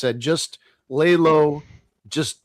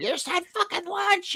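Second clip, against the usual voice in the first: very high, shrill, mock screaming yell; 6 dB quieter than usual. Retelling Connor screaming at people running by: imitating Connor screaming. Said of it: "Connor's screaming at them".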